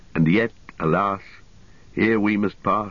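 ordinary delivery, nothing marked

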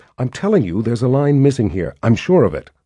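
ordinary delivery, nothing marked

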